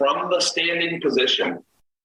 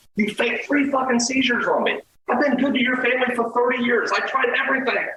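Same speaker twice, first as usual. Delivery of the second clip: mock very high-pitched angry, furious tirade; 12 semitones higher than usual. Speaker reenacts what he said to a woman getting up off the floor, retelling his own angry rant. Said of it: "I just let her fucking have it".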